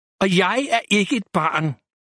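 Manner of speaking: ordinary delivery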